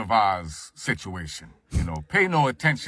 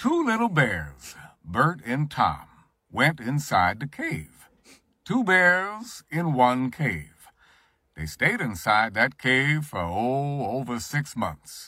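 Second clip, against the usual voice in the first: storybook narrator voice, "over" drawn out. Offering an example story to tell someone, in Morgan Freeman narrator voice. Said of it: "when you hear Morgan Freeman, what you're really hearing is me".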